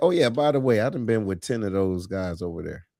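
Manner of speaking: ordinary talk, nothing marked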